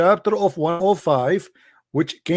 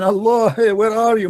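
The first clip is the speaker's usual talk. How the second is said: put-on taunting, jeering, half-voiced scream; 3 semitones higher than usual. Retelling how an attacker at the Kaaba challenged Allah: imitating someone screaming. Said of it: "he was screaming".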